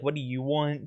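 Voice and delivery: acted, distressed, annoyed, put-out, reluctant tone. Retelling how a man he went up to talk to answered him: mock-annoyed. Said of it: "He sounds very not happy to be speaking to me".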